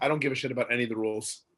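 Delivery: ordinary delivery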